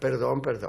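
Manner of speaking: normal talking voice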